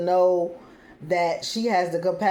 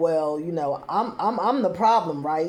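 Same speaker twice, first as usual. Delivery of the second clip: condescending, mocking, talking-down tone. Retelling what he said, in an imitated condescending tone. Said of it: "he goes into this condescending tone".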